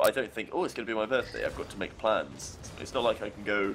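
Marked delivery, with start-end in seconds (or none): none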